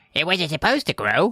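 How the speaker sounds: put-on bratty cartoon kid voice. Voicing Kermit freaking out about the growing mixture: full Cartman voice. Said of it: "Full Cartman".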